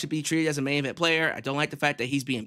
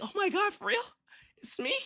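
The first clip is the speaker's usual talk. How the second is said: very high-pitched, stunned, shocked disbelief; 6 dB quieter than usual. Retelling The Miz being picked: imitating The Miz in disbelief. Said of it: "And Miz is like".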